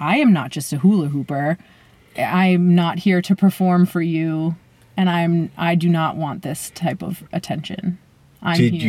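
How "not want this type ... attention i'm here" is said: ordinary talk, nothing marked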